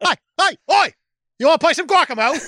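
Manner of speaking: put-on British accent. Joking about a boardwalk game, in a Michael Caine British accent. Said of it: "That was a good Michael Caine, and that's just a good British person in general".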